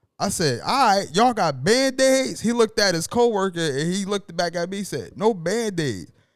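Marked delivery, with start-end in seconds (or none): 5.2-6.1 imitated Jamaican accent. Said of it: "in his Haitian or Jamaican accent".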